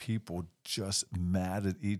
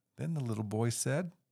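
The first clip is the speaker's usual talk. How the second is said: ordinary delivery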